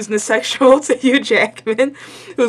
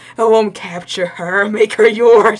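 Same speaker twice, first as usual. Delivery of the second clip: whispered speech. Retelling a movie scene where the hero whispers: imitating Deadpool whispering. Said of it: "And he whispered to him".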